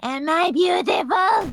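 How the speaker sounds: menacing demon woman voice, high pitch. Voicing a demon woman entering the classroom: menacing cackling demon woman. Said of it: "cackling menacingly".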